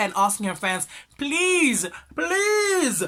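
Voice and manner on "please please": high-pitched, loud pleading and begging. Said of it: "pleading, begging".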